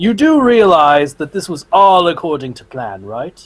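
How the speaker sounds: flat deadpan delivery. A player voicing their character's line while holding up Novosi, deadpan. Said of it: "say with a deadpan voice".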